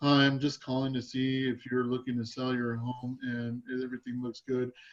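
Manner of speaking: soft, dull, lifeless, unappealing voice. Realtor showing how a sales call should not sound, unappealing sales-call delivery. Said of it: "If you sound like this".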